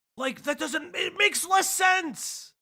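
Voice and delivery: playful shouting. Retelling own reply to a question, yelling for comedic effect. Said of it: "I'm yelling for comedic effect".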